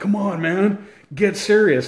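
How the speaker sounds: irritated scolding. Retelling what his spotter said after he laughed mid-rep, imitating someone pissed off. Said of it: "and he gets pissed off".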